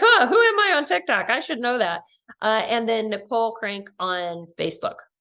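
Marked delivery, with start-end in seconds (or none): 0.0-2.0 high, loud, clueless mock squeal.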